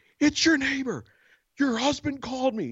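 loud shouting, calling out to be heard. Speaker retells screaming from the staircase to a woman in the house, reenacting own screaming. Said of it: "And I'm screaming now from the staircase".

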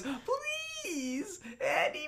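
tearful, very high, voice breaking and swooping. Retelling a story, the speaker acts out a man begging with his voice cracking. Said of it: "His voice is cracking".

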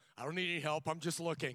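acted, very loud, high-pitched, defensive tone. Retelling meeting a car salesman, acting out getting defensive. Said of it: "got all defensive".

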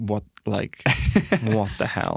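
bone-dry deadpan presenter delivery. Retelling how the presenter reacted to a player's odd answer: imitating a deadpan reaction. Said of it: "the presenter's reaction was just, like, pa-, deadpan".

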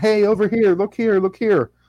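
put-on high, loud shouting and calling out. Describing a fake red carpet with fake cameras, imitating paparazzi yelling. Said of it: "like paparazzis yelling".

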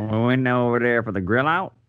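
put-on high voice with Canadian-Florida accent. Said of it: "what kind of accent was that".

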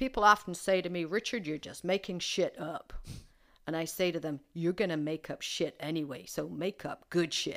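bad put-on American accent. Quoting Richard Bandler from a training session, in a bad American accent. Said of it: "the bad American accent I'm about to do".

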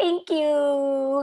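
high, sweet, overly grateful gushing, "you" drawn out. Retelling how Rachel thanks Monica dotingly: imitating Rachel's doting thank you. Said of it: "she kinda looks at her dotingly".

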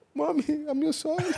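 mock very high sobbing, wailing, screaming. Retelling a childhood beating, quoting yourself to your mother: imitating a crying scream. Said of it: "I was crying, I was screaming, I was like".

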